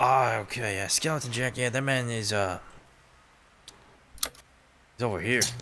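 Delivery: put-on Australian accent. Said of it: "I'm trying to do a, an Australian accent".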